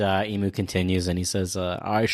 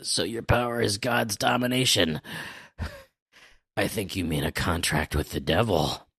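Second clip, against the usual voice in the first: put-on wheezing prospector voice, much faster. Retelling a scene, Loki, worn out by the fighting, speaks: wheezing Loki voice. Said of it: "he's wheezing".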